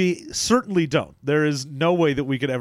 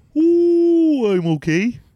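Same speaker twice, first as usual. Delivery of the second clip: very high, loud, talking through a drawn-out yawn; 12 semitones higher, 5 dB louder than usual. Greeted by a co-host at the start of the show, the speaker answers while yawning. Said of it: "Did I catch you in the middle of a yawn".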